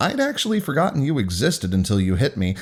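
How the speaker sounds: ordinary delivery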